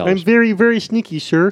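high, loud cartoon frog puppet voice. Trying out character voices with others, Kermit the Frog voice. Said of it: "That's Kermit the Frog".

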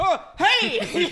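very high, loud, flustered blurting. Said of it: "he's gawking at her".

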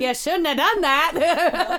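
very high, loud mid-Atlantic voice. Repeating another speaker's line as the Warrens: Ed and Lorraine Warren impression. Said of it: "your Ed and Lorraine Warren impression".

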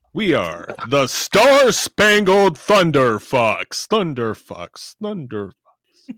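slow, loud, booming announcer voice with echo.

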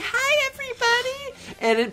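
very high, super cute cutesy-wootsy voice. Show how an amazing performer can greet everybody, in Stephanie Sheh's really cutesy-wootsy voice. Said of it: "go to that really cutesy-wootsy".

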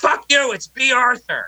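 very high shriek, stretched long. Telling how they stood up in the room mid-call and screamed, retelling a scream. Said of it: "stood up in the room and screamed".

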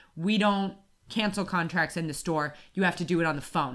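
ordinary talk

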